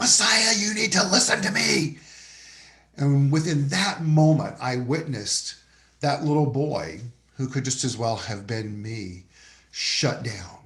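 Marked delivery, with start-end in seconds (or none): 0.0-2.0 very high, shrill, loud scream. Retelling how a father screamed at his son in a park: imitating a scream. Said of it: "his father screamed at him".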